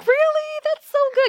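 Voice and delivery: very high, loud, overexcited thrilled gush.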